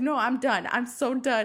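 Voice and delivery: slow, play-acted spooked, freaked-out, at wits' end. Retelling a YouTuber exploring who wants to turn back: imitating Mikey freaking out. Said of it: "she was fucking freaking out".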